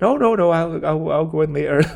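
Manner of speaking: put-on soft Irish accent. Retelling a scene from a film, quoting a character's reply: soft Irish accent. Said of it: "he does that little soft Irish accent".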